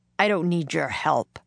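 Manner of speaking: plain reading voice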